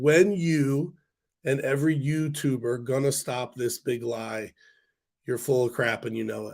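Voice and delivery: ordinary talk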